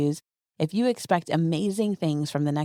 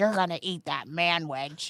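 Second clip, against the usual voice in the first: mock angry, stern father voice; 3 dB quieter than usual. Retelling how a dad forced a brother to eat: imitating an angry dad. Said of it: "He was so mad at my brother".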